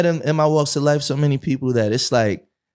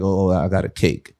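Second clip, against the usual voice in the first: put-on trembling, shaking voice, lower; 9 semitones lower than usual. Retelling a father's words after he retired: imitating a shaking voice. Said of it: "voice shaking".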